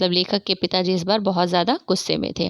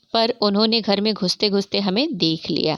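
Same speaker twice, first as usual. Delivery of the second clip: ordinary talk, nothing marked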